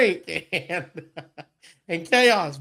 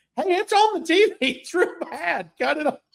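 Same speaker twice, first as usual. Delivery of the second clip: put-on giggling voice, higher; 9 semitones higher than usual. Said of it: "comes giggling and running".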